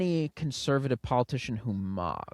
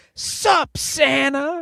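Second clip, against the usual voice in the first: put-on very high, very loud shrieking kid yell; 13 semitones higher, 10 dB louder than usual. Describing a video of a kid, imitating a kid screaming. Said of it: "he is screaming it from the top".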